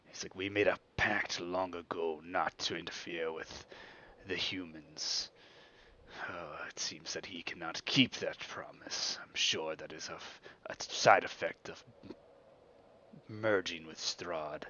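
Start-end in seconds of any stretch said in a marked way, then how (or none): 0.4-9.2 put-on growling voice. Recounting what another figure said, growling in character. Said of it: "and he growls and he's like".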